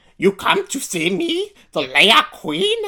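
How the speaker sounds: put-on old witch voice. Imitating the witch from the show, a bit like a bad Yoda impression. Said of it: "so she's like".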